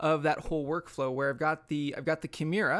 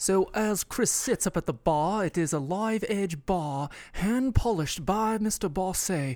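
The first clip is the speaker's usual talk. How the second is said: very slow, put-on British accent in narration style; 3 semitones higher, 4 dB louder than usual. Narrating a mock on-location radio report in a put-on british accent. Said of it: "we need to do it in a British accent".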